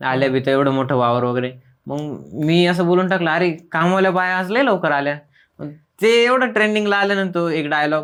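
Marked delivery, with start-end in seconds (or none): none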